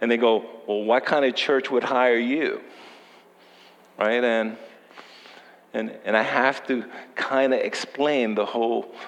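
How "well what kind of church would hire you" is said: dismissive, sarcastic tone full of snark. Retelling what people from the past ask: imitating a sarcastic, snarky question. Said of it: "the sarcasm and the snarkiness comes out".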